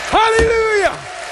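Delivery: ecstatic, joyful, high-pitched shout.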